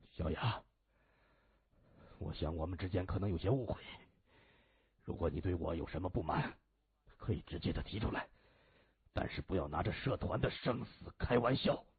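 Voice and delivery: quavering, trembling low voice forced to stay calm. Trying to keep his tone calm, a man speaks over the phone: trembling, low voice. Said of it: "他声音颤抖又低沉地说".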